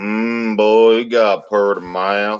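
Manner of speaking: dopey, slack-jawed, put-on backwoods yokel voice. Acting out seventy-two locals greeting a man in heaven: slack-jawed Virginia local voice. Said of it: "seventy-two slack-jawed locals standing there going".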